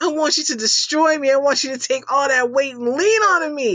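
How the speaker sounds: thrilled, loud and high. Retelling what an eager massage client said: imitating someone stoked. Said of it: "He was so fucking stoked".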